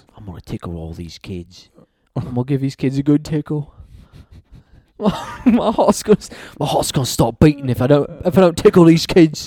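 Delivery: poorly put-on action-star tough-guy voice. Doing a bit as the action star, bad Jason Statham impression. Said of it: "people do impressions of his voice".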